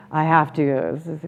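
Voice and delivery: low, soft, falling downbeat tone, mildly annoyed. Speaker contrasting two ways of phrasing something, downturned voice. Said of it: "your downturned voice".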